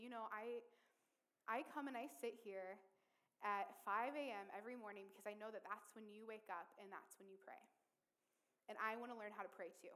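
normal talking voice

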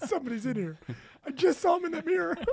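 pitch goes way up, loud and bouncy. Chiming in on a joke about being home alone, Mickey Mouse voice. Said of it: "I did that Mickey Mouse voice".

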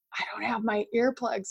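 soft half-whisper under the breath. Retelling what he half-whispered to the speaker while being woken up, retelling his half-whisper. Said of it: "he whispers to me".

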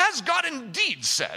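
put-on British accent, very slow, swooping, drawn out. Reading a quote of the serpent from the New King James Version, British accent. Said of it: "Do you hear the British accent I gave to that one?".

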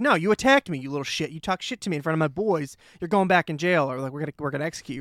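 ordinary delivery

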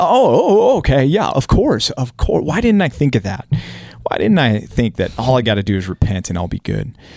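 salty, laid-on sarcastic, swooping sing-song tone. Acting out Job's reply to his friend: imitating Job's sarcasm. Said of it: "Little sarcasm there".

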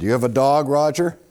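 plain

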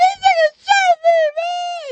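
shrill, very high, slow, drawn-out sobbing wail. Retelling what a big man who had been shot said: imitating a high-pitched crying voice. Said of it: "with them high-pitched voice".

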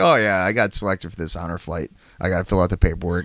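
casual, offhand, nonchalant, matter-of-fact delivery. Retelling how Jerry casually mentioned the honor flight: imitating Jerry, nonchalant. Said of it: "so nonchalantly, like, matter of fact".

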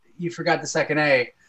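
normal talking voice

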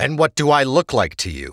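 annoyed, fed up. Kotuk answers a man who tells him to keep his soul stealing away; irritated. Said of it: "striding forward with irritation".

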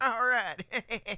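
movie-tough voice, sliding into slight Southern accent. Showing how a Con Air Nicolas Cage impression turns into Con Air Nicolas Cage voice drifting into George W. Bush. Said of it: "if I had to do Con Air Nicolas Cage, it would become, uh, George W. Bush".

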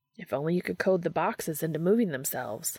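ordinary delivery

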